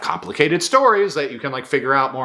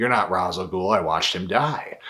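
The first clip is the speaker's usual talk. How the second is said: mock-grave voice, much lower; 6 semitones lower, 4 dB quieter than usual. Retelling a scene, the speaker quotes Bruce facing a man in costume: Bruce, put-on very serious. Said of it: "Bruce looks at him very seriously".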